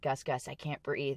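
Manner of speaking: mock terrified, petrified-sounding voice. Retelling calling to a teammate from the bottom of a dog pile, imitating a petrified voice. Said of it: "like in a very like petrified voice".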